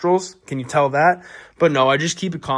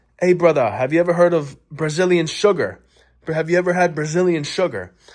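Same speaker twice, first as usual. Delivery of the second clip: put-on Jamaican accent, put on; 3 semitones higher than usual. Retelling what a guy said to a buddy, imitating Kyle's fake Jamaican accent. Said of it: "talking a Jamaican accent".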